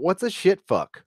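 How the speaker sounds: mock baffled, puzzled, high, confused tone. Retelling asking the angry guy who cursed at them, retelling a confused question. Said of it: "I was just confused why he called me".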